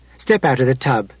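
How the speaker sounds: ordinary delivery, nothing marked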